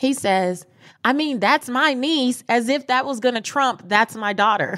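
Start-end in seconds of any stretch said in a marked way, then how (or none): 1.0-2.4 loud, raised voice, pitched up. Retelling a blowout with the man who took their child, quoting him in a loud voice. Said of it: "he says in a loud voice".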